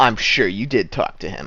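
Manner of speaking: sneering guard voice. Voicing a guard who sneers at the player's character, sneering guard voice. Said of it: "the guard sneers at you and he says".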